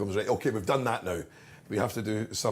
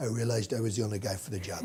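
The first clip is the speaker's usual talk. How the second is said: put-on intimate impression voice. Acting out Donald answering Barbara Walters, do an intimate Donald Trump impression. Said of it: "it was a more intimate Trump".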